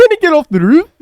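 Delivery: very loud, high-pitched put-on Scottish accent. Trying out a line in a Scottish accent. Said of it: "Try a Scottish accent".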